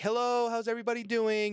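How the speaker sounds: put-on cheery waitress voice. Retelling greeting a table as a server: imitating own bright server greeting. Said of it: "Yes, I sound like that".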